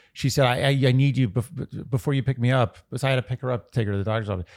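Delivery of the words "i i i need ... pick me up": genuinely distressed, stammering and stumbling over words. Retelling a phone call from the speaker's mother: imitating mother's distressed voice. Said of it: "like the real distress in her voice".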